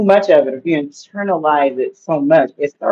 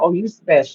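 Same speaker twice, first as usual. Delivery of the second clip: mock, dripping with sarcasm, sarcastic mocking tone. Imitating how some people say it sarcastically, in a mock-sarcastic tone. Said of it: "some people they try to be sarcastic when they say that. They're like".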